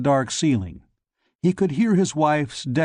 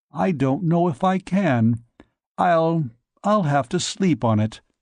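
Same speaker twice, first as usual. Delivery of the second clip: hesitant, faltering, unsure voice holding back a tremble; 3 semitones higher than usual. Asked for help, a fearful man answers honestly: trying not to tremble. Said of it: "[name] stood up and bowed. He began the ritual four urgings, / swallowing hard".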